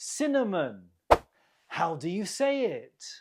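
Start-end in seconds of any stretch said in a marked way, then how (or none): 0.0-0.9 cinnamon with stress on first syllable cin. Pronunciation practice on word stress in cinnamon: stress on first syllable cin. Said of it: "the stress is on the first syllable".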